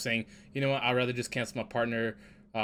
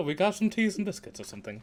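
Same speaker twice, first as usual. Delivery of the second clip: put-on English accent, pitched up; 8 semitones higher than usual. Imitating how an english actor talks off screen: imitating an english accent. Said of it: "hearing him talk regular".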